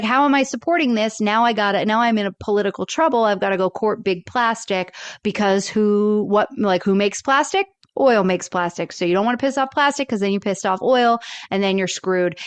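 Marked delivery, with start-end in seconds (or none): none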